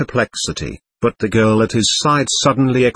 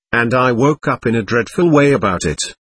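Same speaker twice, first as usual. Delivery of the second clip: ordinary delivery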